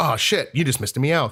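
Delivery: put-on disappointed tone. Retelling what a passing kid seemed to say: imitating a disappointed tone. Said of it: "it was in a disappointed tone".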